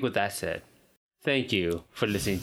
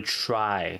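strong stress on the word "try". Explaining the upload schedule to another speaker: stress on try. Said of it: "Emphasis on try".

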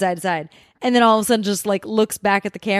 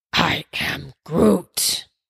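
low, deep, insistent delivery; 5 semitones lower than usual. Groot in the front line at McDonald's wanting his fries, adamant Groot voice. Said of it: "he's like really adamant about getting his fries".

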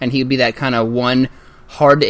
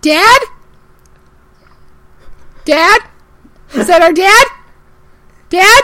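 put-on very high little child voice; 6 dB louder than usual. Asked on the spot to do a voice, in a little kid voice. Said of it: "Give us a little kid right now".

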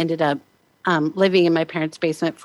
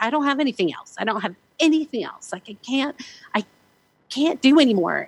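put-on yelling, higher pitch; 7 semitones higher than usual. Retelling a sleepless night at three in the morning: imitating own past yelling. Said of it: "yelling at him and saying".

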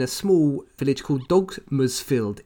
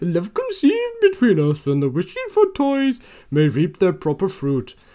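bad Welsh accent, high and swooping; 5 semitones higher, 4 dB louder than usual. Taking your turn reading the lines aloud, in an attempted Welsh accent. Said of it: "That didn't sound very Welsh".

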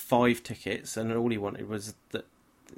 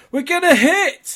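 very loud, very high-pitched, shrill shout; 13 dB louder than usual. Retelling what a little brother shouted as the plane came in to land, retelling a shout. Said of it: "starts shouting".

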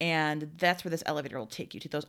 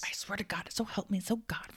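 mock angry scolding whisper, higher; 5 semitones higher than usual. Acting out parents fighting in an elevator: imitating an angry mom's whisper fight. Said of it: "like angry mom fighting".

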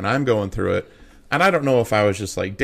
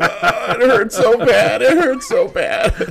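put-on loud, very high, drawn-out baby-like bawling; 13 semitones higher, 5 dB louder than usual. Retelling getting up after a fall down the mountain, imitating own bawling like a baby. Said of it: "immediately started bawling like a baby".

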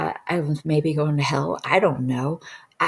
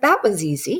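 featherlight, easy, pitched-up voice; 5 semitones higher than usual. Retelling own words after floating out of the body: imitating own very light voice. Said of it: "I had this very light voice".

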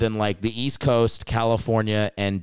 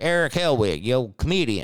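put-on heavy Alabama accent, laid on thick; 2 semitones higher than usual. Retelling a phone call from a podcaster: imitating thick Alabama accent. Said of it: "he's got a thick Alabama accent".

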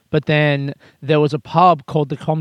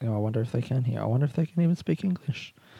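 speaking softly and quietly; 2 semitones lower, 9 dB quieter than usual. Recording outdoors while a couple walks past, talking quietly. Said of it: "I'm talking quietly right now".

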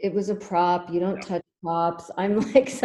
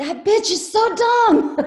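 very high, loud, shrill yell; 13 semitones higher, 7 dB louder than usual. Recalling seeing the movie in a theater, retelling a yell at the screen. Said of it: "yelling at the screen".

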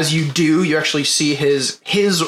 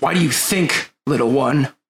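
sour, resentful, really bitter tone. Retelling a one-handed character who turns on the player: mock really bitter. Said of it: "really bitter with you and goes".

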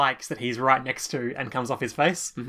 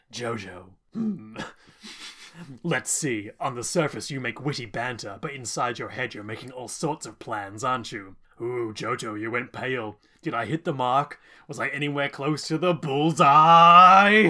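weird, gloating, taunting villain voice, bullseye stretched. Retelling a villain's gloating monologue: imitating a gloating villain's weird tone. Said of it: "He says it in a very weird tone".

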